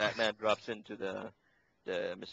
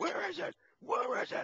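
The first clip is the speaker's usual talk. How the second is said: very high-pitched, gruff, mock yell. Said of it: "But in this one, he kept on on Bane".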